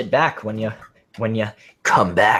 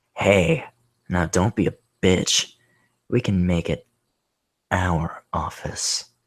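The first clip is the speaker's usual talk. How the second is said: sleazy, creepy man voice; 4 semitones lower, 4 dB quieter than usual. Retelling a guy's words after he squeezed the speaker's shoulder, creep voice. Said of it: "You wanted a creep voice, I'm giving you a creep voice".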